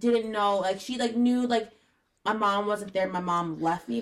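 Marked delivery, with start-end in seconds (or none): none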